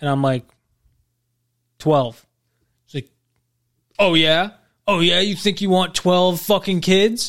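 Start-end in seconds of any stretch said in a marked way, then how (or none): 4.0-7.3 put-on mad, irritated, challenging tone. Retelling a woman's reaction to his answer about kids, mock-angry. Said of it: "Like getting mad at me".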